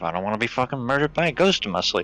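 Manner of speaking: muttered quietly under breath. Speaking in character about a ghost following the group, muttering under breath. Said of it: "Just under my breath".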